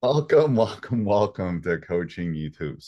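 slow speech while cracking up laughing. Opening the show after making fun of a co-host: laughing while talking. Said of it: "Sorry, I'm laughing when we come on".

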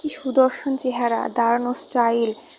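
plain

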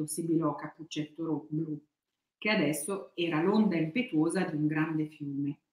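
plain reading voice

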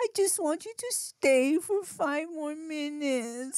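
mock weepy, very high, slow, tearful little-kid pleading. Retelling a child begging him to stay longer: imitating a crying child. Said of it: "She starts crying".

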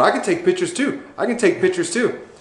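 high, heated, hot-tempered, riled voice. Retelling a man who came over photographing the speaker: retelling a heated retort. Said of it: "he's all hot and heavy".

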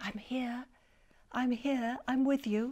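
soft, hushed whisper, close to the ear. A little figure climbs onto a frightened mole's shoulder and whispers. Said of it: "crawled onto his shoulder and whispered".

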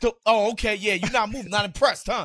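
imitated yell. Recounting a dream where he yelled after every fadeaway, imitating someone yelling. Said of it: "he would yell at me like".

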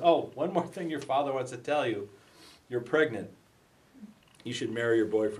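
normal talking voice

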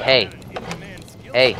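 ordinary delivery

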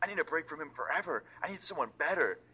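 put-on high, furious, fed-up angry outburst. Retelling a couple's fight, quoting the woman he screamed at; mock-angry retelling. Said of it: "She gets so fucking mad".

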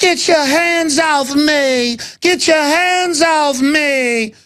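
very high, slow, drawn-out drag voice. Acting out a disguised figure crying out in a staged robbery: imitating Bill Kristol in drag. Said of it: "Bill Kristol with lipstick on".

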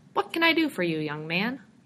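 courteous, polite shopkeeper voice. Jim, surprised by George bursting in, asks in his polite customer voice. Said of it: "in the polite voice he reserved for potential customers".

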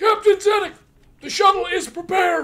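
shrieking scream, very loud and very high. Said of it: "your screaming creature".

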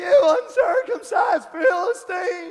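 put-on cracking high boy's voice. Retelling the David story, speaker voices the little boy: imitating David's cracking voice. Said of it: "his voice was cracking".

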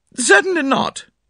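sharp, very high-pitched snapping tone. A woman answers her niece asking if anything is the matter; sharp. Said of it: "said Mrs. Inglethorpe sharply".

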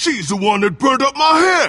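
shouting in anger. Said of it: "Calm down, Finch".

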